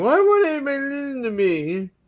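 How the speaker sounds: play-acted very high, tearful, swooping crying voice. Joking about a character's next season, mock crying as Rhaenyra. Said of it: "Rhaenyra's gonna be crying, saying".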